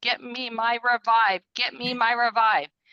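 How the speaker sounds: mock urgent drawn-out cry. Retelling a moment at the doctor's, calling to a husband: imitating a scream. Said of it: "I just screamed to my husband".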